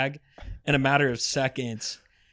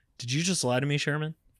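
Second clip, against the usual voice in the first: pointed, sudden, sharp, cutting tone; 4 dB quieter than usual. Retelling how a colleague suddenly questioned him: imitating Will asking sharply. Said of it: "he just so sharply".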